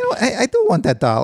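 very high, squeaky, swooping little mobster voice. Redoing the teacher's line about the dollar: squeaky mobster voice. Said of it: "it's just like a squeaky mobster".

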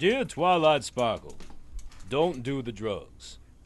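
very low, deep put-on voice. Reading a letter from Sans aloud, in your best impression. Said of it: "in your best impression".

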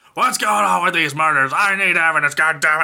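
put-on screaming, ranting delivery like an angry boss. Retelling a police chief demanding evidence: imitating someone screaming. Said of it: "just screaming at everyone's face".

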